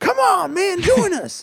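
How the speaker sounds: imitated yell. Retelling how a companion in the game yelled to join: imitating someone yelling. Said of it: "is just yelling at me".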